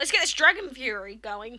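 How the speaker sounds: voice breaking and cracking on the words. After thanking a guest for joining, kicking things off, voice cracking. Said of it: "Did you hear that voice break?".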